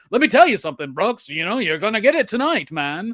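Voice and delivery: put-on classic old Hollywood film mid-Atlantic accent. Speaker discussing a movie's dialogue demonstrates the old Hollywood transatlantic accent. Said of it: "that transatlantic uh accent that everybody uses".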